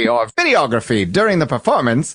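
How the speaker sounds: put-on old-timey announcer voice.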